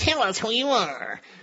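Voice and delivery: small, high cartoon villain voice. Reading the high priest's demand to Jesus aloud, in a little cartoon bad-guy voice. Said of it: "in that little voice from those cartoons".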